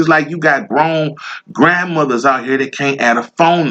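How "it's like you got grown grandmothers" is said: plain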